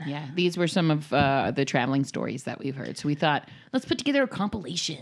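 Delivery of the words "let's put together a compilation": on-air radio DJ announcing voice. Host introducing a compilation of guests' traveling stories, radio DJ voice. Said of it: "I said that like a DJ".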